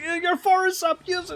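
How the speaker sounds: put-on screaming. Retelling watching a match, imitating his own screaming at the screen. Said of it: "And I'm like".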